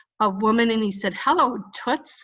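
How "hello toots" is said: funny put-on cartoon duck voice. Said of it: "where Donald Duck was transported back in time".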